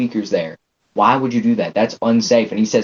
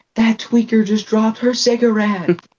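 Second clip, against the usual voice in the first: put-on yell, higher; 11 semitones higher than usual. Retelling a girl on the bus pointing and laughing: imitating someone yelling.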